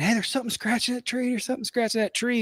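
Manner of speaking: mock screaming, high-pitched. Retelling a buddy on tree watch alerting the group: imitating a buddy screaming. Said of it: "he started screaming".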